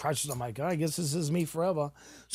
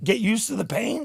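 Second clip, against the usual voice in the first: put-on angry yelling, higher and louder; 7 semitones higher, 5 dB louder than usual. Retelling yelling at a prosthetics fitter about pain: retelling own screaming. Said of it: "'cause I was screaming".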